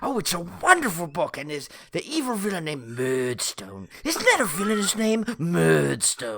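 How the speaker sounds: animated storyteller voice with swooping pitch. Recalling a TV episode where a man recommends a book, doing a Burgess Meredith impression. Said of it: "my little Burgess Meredith impersonation".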